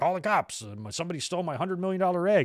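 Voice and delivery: high, garbled, barely understandable mumbling. Retelling how he said to call the cops over a stolen egg, as a mumbling Vince impression. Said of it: "Vince like is like mumbling in his voice. You can barely understand him".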